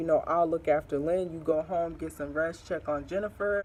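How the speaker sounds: ordinary talk, nothing marked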